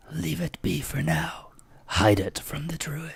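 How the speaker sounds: high-pitched demon voice. Voicing a demon speaking in a character's head: demon's voice. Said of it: "It is the voice of your demon".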